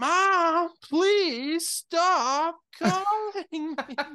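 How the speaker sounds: very high, very slow, stretched-out yell. Recounting a film scene where a character answers his mother, mock yelling. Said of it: "he just yells".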